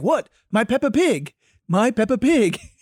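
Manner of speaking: heavy, bad put-on Spanish accent, loud and slow. Retelling what the coach said: imitating a coach's thick Spanish accent. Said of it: "he's got a thick Spanish accent".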